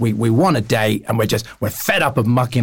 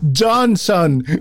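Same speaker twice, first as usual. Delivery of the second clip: thick put-on Greek accent, pitched up; 7 semitones higher than usual. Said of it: "There we go".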